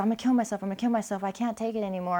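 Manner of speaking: screamed, sobbing outburst of despair. Retelling a brother screaming on the phone: imitating screaming and crying. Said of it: "And he was screaming".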